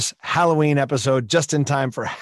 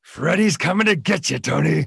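rough, creaky, growling put-on villain voice; 3 semitones higher than usual. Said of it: "I do an impression of Freddy Krueger that my friends all say sounds like [name]".

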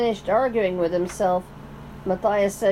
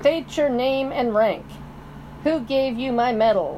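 hard, flat, toneless owl voice, snapped; 3 semitones higher than usual. Narrator reads the owl questioning the mouse, in a flat, hard voice. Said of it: "snapped the owl in a flat, hard voice".

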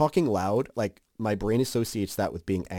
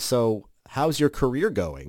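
acted, friendly, breezy casual tone, spoken close. Retelling a man at a party catching up over the band: retelling a loud question. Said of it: "leans over and says quite loudly".

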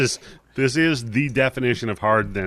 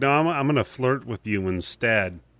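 normal talking voice

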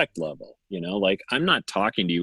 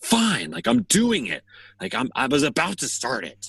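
very high, snippy, acted-out child voice; 9 semitones higher than usual. Retelling a child's reply when asked to set the table: imitating a child snapping. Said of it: "he'll kinda snap a little bit".

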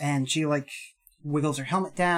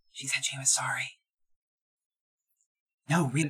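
secretive, hushed stage half-whisper; 3 dB quieter than usual. Half-whispering to a companion so another character can't overhear: half-whispering. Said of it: "I whisper so that Saoirse can't hear".

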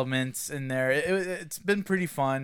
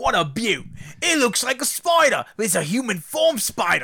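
put-on Australian wildlife presenter voice, higher and louder; 7 semitones higher, 5 dB louder than usual. Joining in the joke about a Crocodile Hunter: Crocodile Hunter impression. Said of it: "it would've been better if they had a Crocodile Hunter in there".

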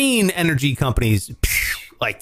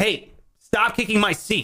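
insistent, no-nonsense, adamant tone, slow and pitched up; 6 semitones higher than usual. Retelling what he says to a seat-kicking child, imitating himself getting adamant. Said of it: "I get, like, fucking adamant about it".

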